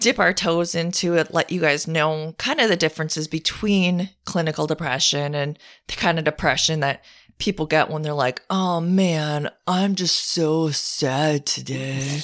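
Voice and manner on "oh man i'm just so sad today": very slow, laid-back, drawn-out surfer drawl. Describing people with everyday sadness to listeners, imitating them in a surfer dude voice. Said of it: "have to be a surfer".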